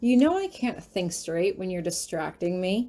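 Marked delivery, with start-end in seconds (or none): none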